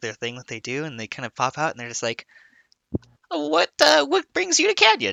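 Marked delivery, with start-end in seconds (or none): 3.3-5.1 very high, nervous, jittery, swooping voice. Voicing a grinning townsperson peeking from a building: nervous grinning townsperson. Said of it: "really nervous".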